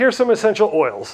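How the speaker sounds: ordinary delivery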